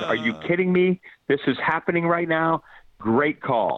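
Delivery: mock disbelieving yell, top of lungs, high, climbing. The speaker recalls his team's touchdown against the Trojans: retelling a scream. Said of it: "I'm screaming at the top of my lungs".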